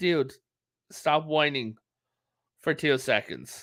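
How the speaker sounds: ordinary delivery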